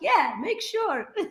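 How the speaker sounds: high, slow, knowing tone. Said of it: "I'm like".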